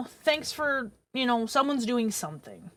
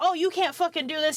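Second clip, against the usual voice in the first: put-on male yelling, higher pitch; 4 semitones higher than usual. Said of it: "start yelling at him".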